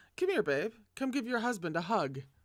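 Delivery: smarmy, goading tone. Narrator reading a scene where a husband calls his wife over, smarmy, provocative voice. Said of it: "In a smarmy, provocative voice".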